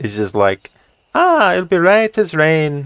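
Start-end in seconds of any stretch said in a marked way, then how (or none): 1.1-2.9 badly done fake Irish accent, very high pitch. Voicing Irish's reply about the wagon: bad put-on Irish accent. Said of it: "that's as bad of an Irish accent that I can do".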